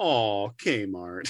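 heaving, mournful sigh, a big lament. Lamenting with all the listeners that a store is gone: mock lament with a big sigh. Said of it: "lamenting this with a big sigh of".

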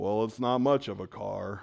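very low, donkey-like voice. Trying out voice impressions one after another, the speaker does Eeyore voice.

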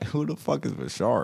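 creaky, rough-edged put-on voice.

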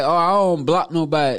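normal talking voice

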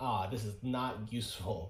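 ordinary delivery

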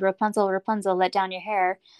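plain reading voice

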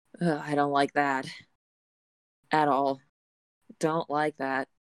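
fast, annoyed, fed-up, frustrated complaining. Speaking as Georgia after the dragon flies past, frustrated. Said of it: "Georgia is thankful but also frustrated".

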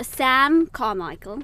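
British accent on the name. Listing the three potential baby daddies, British accent. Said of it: "I'm saying this in a British accent".

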